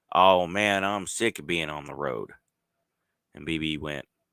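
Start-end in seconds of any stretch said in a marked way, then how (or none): 0.2-2.3 put-on slurred, croaking voice with Midwestern accent. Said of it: "Walsh's slurred Midwestern croak".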